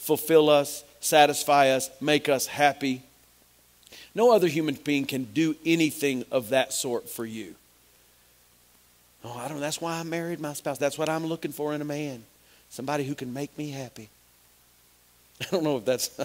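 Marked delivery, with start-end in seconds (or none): 10.8-14.1 put-on West Texas woman's voice, much quieter. Speaking about god, speaker mimics a hypothetical wife in a west texas woman's voice. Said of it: "is that the West Texas woman's voice?".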